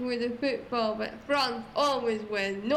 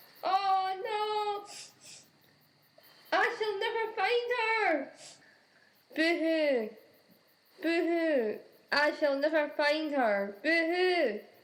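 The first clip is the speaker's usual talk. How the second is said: wailing, pitched-up, blubbering boo-hoo sobbing; 5 semitones higher than usual. Despairing of ever finding a lost wife: crying. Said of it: "Why are you crying?".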